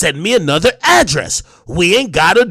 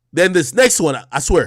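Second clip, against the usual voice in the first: ordinary delivery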